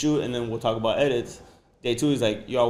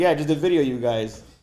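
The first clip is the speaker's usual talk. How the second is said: overjoyed, super happy voice; 3 semitones higher, 4 dB louder than usual. Retelling own answer after being asked about video: imitating own super happy reply. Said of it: "super happy".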